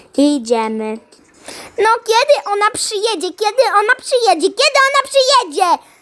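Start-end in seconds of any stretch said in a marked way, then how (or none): 1.7-5.7 impatient, insistent, repetitive pestering nagging. Asking over and over when she will arrive, yelling. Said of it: "[name], nie drzyj się tak".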